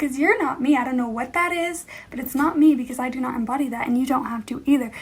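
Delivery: ordinary delivery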